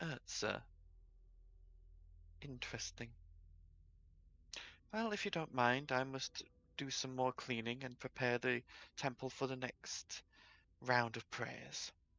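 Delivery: hushed, very quiet priestess voice. Voicing the priestess as she answers the visitors in her temple: priestess character voice. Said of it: "Priestess sort of glances over her shoulder at you and goes, / She stands and turns to face you properly, / Priestess sort of glances over her shoulder at you and goes".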